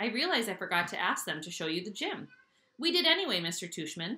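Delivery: ordinary delivery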